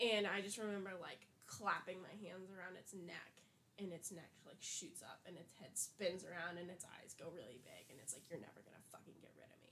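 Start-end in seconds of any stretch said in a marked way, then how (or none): 8.3-9.7 whispered, breathy, creepy demonic cat voice. Retelling a dream where the cat speaks to them: imitating a creepy cat voice. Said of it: "this really creepy voice".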